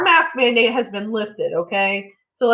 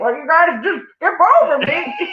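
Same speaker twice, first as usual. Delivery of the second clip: put-on old man voice, higher pitch; 6 semitones higher than usual. Retelling what a man at the agency said: imitating how the man sounded. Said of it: "This is how he sounded".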